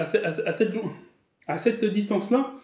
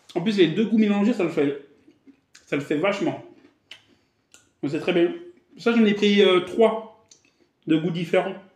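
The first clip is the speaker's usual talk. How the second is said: talking with mouth full of food. Tasting a snack and describing the flavours, talking with mouth full. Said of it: "je sais qu'on ne doit pas parler la bouche pleine".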